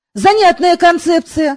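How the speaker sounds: ordinary delivery, nothing marked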